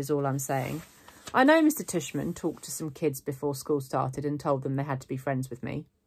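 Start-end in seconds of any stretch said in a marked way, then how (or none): none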